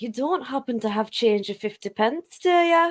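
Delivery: attempted, put-on Scottish accent. Answering a request to do a Scottish accent: Scottish accent. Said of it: "can you do a Scottish accent?".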